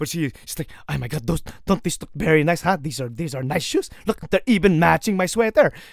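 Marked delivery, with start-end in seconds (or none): 0.9-5.7 put-on Filipino accent. Speaker retells his mother's words for a joke, put-on Filipino accent. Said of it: "I'm just gonna put a Filipino accent on my mom".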